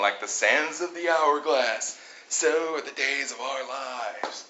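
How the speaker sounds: slow, drawn-out surfer-dude voice. Contestant reading a quiz question aloud, doing a Ted impression. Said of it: "That's my Ted impression".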